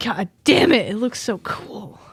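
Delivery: muttered softly under the breath. Reacting in character to a pet's new studded armor: muttered under breath. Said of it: "Under my breath".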